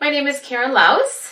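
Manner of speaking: uncertain, question-like rising pitch on Laus. Showing how coached clients introduce themselves: rising on Laus like a question. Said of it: "they use a comma when they say their name or even a question mark. Sounds something like this".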